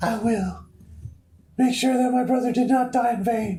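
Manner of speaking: put-on pitched way up like a girl. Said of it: "I don't want you to do the girl voices".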